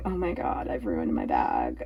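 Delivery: slow, breathy, tearful crying whisper. Retelling sitting in the car after a downpour: retelling own crying. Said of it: "I'm just crying going".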